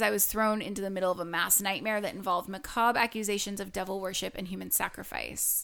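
ordinary talk

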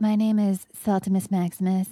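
put-on Southern belle accent. Player introducing their character at the table, Saltimus Maximus Southern belle voice. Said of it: "I was going to do Southern Belle".

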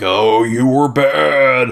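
very slow, demonic fatherly voice. Retelling a haunted story, the demon dad speaking on the phone: demon dad voice. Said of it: "it's the demon dad voice being like".

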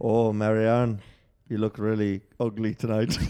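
put-on Irish-accented speech. Role-playing an Irish love scene from the show with another speaker, Irish accent as Connell. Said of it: "recreate the love scenes in the Irish accent".

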